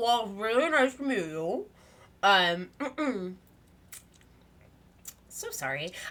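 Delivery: acted full-mouthed talking. Retelling how the woman in pink greeted people, imitating a mouthful of cheese. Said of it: "full mouth of cheese is like".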